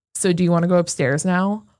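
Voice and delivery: put-on voice, called out loudly. Retelling asking her at the bottom of the staircase: retelling saying it very loudly. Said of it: "I just very loudly say".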